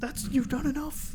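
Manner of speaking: very high-pitched, weeping, tearful crying voice. Retelling a movie scene where she stops him: imitating someone crying. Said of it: "She's, like, crying, and she's like".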